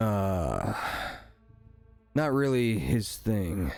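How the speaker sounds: deep, low gentleman's voice. Retelling a conversation, quoting the gentleman's reply in a deeper voice. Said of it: "the kind of deeper voiced gentleman says".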